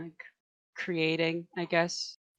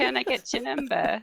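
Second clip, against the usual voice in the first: terrible put-on English accent, high and loud; 7 semitones higher, 5 dB louder than usual. Trying a pickup line after another speaker's example: bad English accent. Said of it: "god-awful English accent".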